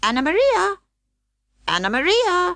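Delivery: very high, squeaking rat-like voice. Reading a children's story aloud, voicing a rat, in a squeaky rat voice. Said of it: "squeaked the rat".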